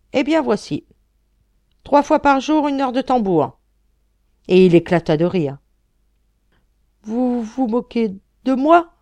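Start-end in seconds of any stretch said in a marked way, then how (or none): 7.0-8.8 stammering, taken aback, higher and louder. Reading a french story aloud, voicing the court officer replying, stammering and taken aback. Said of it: "Balbutia l'officier ministériel interloqué".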